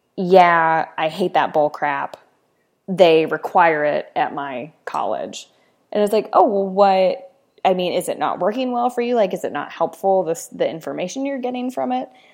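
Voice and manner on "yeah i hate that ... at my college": acted-out scornful, fed-up, annoyed, dismissive grumble. Retelling what a gentleman at an academic gathering said, imitating a dismissive man. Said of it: "very dismissively said something like".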